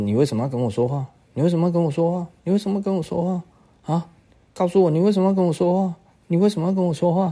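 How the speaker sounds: put-on angry tone. Retelling a story, the speaker acts out the mother speaking very angrily. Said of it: "这个非常生气的说".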